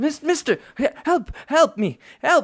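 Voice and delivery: startled screech, very high and loud. A game master voices a startled character calling to the players, startled loud cry for help. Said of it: "he's not as quiet as you'd like him to be".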